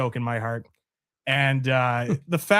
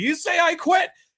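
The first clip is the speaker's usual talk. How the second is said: squeaky, very high-pitched, demanding voice. Retelling an I Quit match, quoting the special guest referee: Roddy Piper impression. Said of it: "Roddy Piper's the special guest referee is like".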